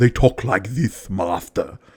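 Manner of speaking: low, slow, drawn-out henchman voice lisping every s. Showing how a henchman talks: lisping Igor voice. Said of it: "I'm adding the lisp".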